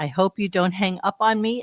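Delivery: ordinary talk, nothing marked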